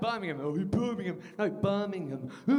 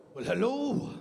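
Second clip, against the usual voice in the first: put-on Welsh accent; 2 semitones higher than usual. Comedian answers an audience member from Wales with a Rhod Gilbert impression. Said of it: "the only Welsh accent I can do".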